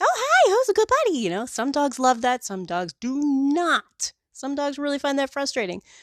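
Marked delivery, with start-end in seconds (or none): 0.0-1.2 over-the-top gushing friendliness, very high pitched. Showing how not to greet a dog at the groomer, overtly friendly. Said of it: "overtly friendly like".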